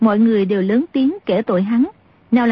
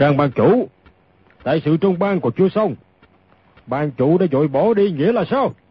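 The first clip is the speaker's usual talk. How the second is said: deep booming character voice; 6 semitones lower than usual. Narrator voices an elder who has just burst through the door: Tống trưởng lão's deep booming voice. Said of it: "lên giọng ồm ồm".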